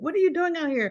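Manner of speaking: very high, alarmed, almost panicked voice. Retelling a mother's question to a brother on the porch: imitating mother's panicked question. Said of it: "a note of kind of almost, uh, panic".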